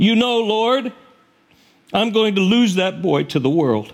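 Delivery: put-on weepy, pleading voice. Speaker retelling a woman's prayer for a boy, imitating tearful praying. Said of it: "she prayed through her tears".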